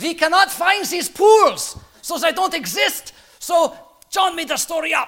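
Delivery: very high, loud, bad German accent. Speaker voices what critics said about john's story, in a bad german accent. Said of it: "so I'll do a bad German accent".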